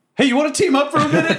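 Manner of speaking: very high, loud in-character shouted yell. Yelling an offer to hobgoblins during a fight: yelling in character. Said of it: "I look over to the hobgoblins and I just yell".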